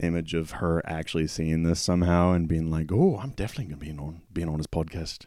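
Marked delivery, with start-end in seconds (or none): 2.9-5.2 put-on clumsy Scottish accent. Imagining Karen Gillan agreeing to join the podcast: Karen Gillan Scottish accent. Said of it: "That's my Scottish accent".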